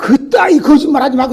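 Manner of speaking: high, angry woman's voice.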